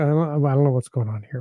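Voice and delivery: normal talking voice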